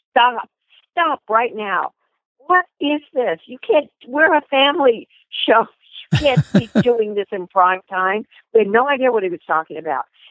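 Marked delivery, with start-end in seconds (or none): 0.2-8.3 mock, high, yelled call-out. Retelling how the director stopped the rehearsal: imitating someone yelling.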